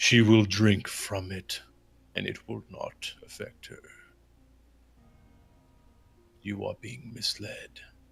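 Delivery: as deep and low as possible, dragon voice. Muhammad answers the group's question in character, deep dragon voice. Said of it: "as deep of a, a dragon voice as he can".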